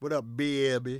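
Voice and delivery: imitated New Orleans accent. Greeting a woman who may be listening and hates this accent, in a put-on New Orleans accent. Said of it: "that's my New Orleans accent to".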